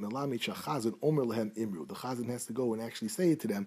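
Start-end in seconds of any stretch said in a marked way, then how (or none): none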